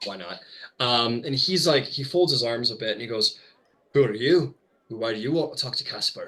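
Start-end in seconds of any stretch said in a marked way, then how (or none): 3.9-6.3 voice of a fantasy dwarf. Voicing a dwarf who questions a rogue about casper; dwarf voice. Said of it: "this guy's like a dwarf".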